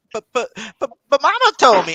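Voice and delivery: high, swooping, sing-song stammer on the buts. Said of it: "You sound like Bobby Boucher from Waterboy".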